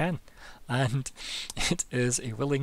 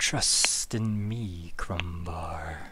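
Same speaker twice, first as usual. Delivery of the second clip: hissing snake voice, much lower, slower; 6 semitones lower than usual. Narrating a game scene, speaker voices a snake speaking to a character, in a hissing snake voice. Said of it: "you just hear the hissing".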